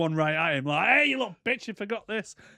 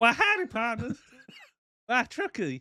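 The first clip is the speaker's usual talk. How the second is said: pitched up, swinging mock voice; 7 semitones higher than usual. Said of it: "the computer's voice in this".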